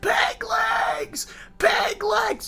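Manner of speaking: mock, shrill, very high top-of-the-lungs screech. Recalling a bit for a collaboration on another channel, retelling own screaming. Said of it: "I was screaming at the top of my lungs".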